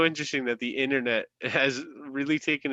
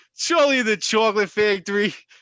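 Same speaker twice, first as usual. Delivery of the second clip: put-on over-the-top Boston accent, higher and louder; 8 semitones higher, 7 dB louder than usual. Saying a movie title as the most Boston guy in the world: exaggerated Boston accent. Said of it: "sounded like the most Boston guy in the world".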